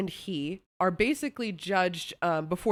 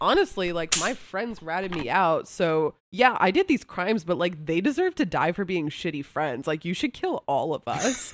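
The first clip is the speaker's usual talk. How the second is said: ordinary talk, nothing marked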